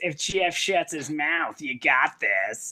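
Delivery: family cartoon movie character voice. Repeating own earlier line to another speaker in the Pixar voice. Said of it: "the Pixar voice".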